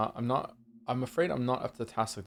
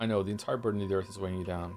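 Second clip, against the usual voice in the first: usual speaking voice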